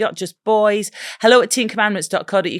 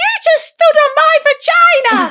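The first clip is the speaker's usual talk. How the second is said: put-on very high, tiny, squeaky little girl voice; 7 dB louder than usual. Retelling what a small girl shouted while play fighting, little girl's squeaky voice. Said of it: "in her little squeaky voice".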